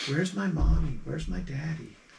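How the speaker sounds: quiet little whispers. A game master voices the little whispers a player hears, whispering. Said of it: "you hear these little whispers".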